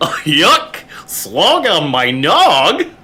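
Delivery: drawn-out words with pitch swooping all over. Riffing on a silly phrase, doing a Goofy voice. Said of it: "I felt like that needed the goofy".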